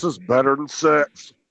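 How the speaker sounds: put-on macho he-man manly voice. Telling the others what a guy should say, in a manly voice. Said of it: "in a manly voice".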